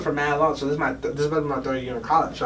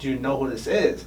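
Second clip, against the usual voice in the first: ordinary talk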